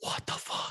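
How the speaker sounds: acted freaked-out shock. Retelling seeing a childhood friend at a surprise party, retelling freaking out. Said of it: "So then I start freaking out".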